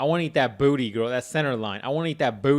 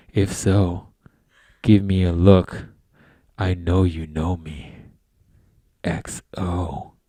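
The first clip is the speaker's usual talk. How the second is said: low, very slow, put-on creepy voice; 6 semitones lower, 4 dB louder than usual. Reading a message aloud to the others: put-on creepy voice. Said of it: "let me get my creepy voice on".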